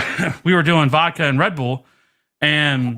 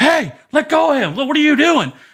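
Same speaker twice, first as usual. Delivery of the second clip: put-on scream, much higher pitch; 12 semitones higher than usual. Recounting the captain and XO walking onto the ship, imitating someone screaming. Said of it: "They scream".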